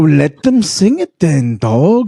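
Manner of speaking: put-on Southern LA Mexican accent. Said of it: "you sound like a fucking su-, s-, Southern L A fucking Mexican".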